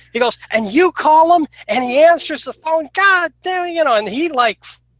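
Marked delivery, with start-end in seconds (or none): 0.5-3.7 furious, angry screaming outburst, pitched high. Retelling how a man flipped out about unpaid amps: imitating someone screaming and yelling. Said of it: "he starts screaming and yelling".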